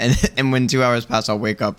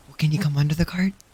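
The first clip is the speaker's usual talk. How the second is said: hushed, soft, careful, as quiet as possible; 4 semitones higher than usual. Speaking in character to someone outside the cart while others sleep: speaking as quietly as possible. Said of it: "as quietly as I can".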